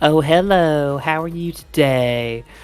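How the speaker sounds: put-on flamboyant, effeminate voice. Retelling ordering over an intercom from the passenger seat: imitating own flamboyant effeminate voice. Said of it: "flamboyant, uh, effeminate gentleman".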